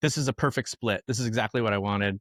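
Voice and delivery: normal talking voice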